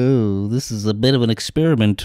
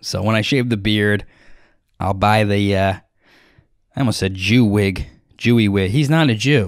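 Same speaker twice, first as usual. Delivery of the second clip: ordinary talk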